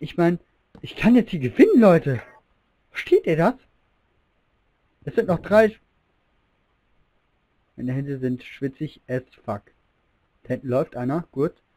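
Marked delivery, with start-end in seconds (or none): 0.0-5.8 thrilled, worked-up, excited tone. A streamer close to winning a game, so excited. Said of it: "ich bin so aufgeregt".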